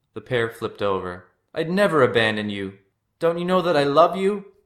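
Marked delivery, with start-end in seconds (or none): 1.6-4.4 loud, high-pitched shouted yell, pleading. Mid-fight, Mark yells at Polly as he jabs him: yelling. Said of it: "Mark yelled as he split Polly's lip".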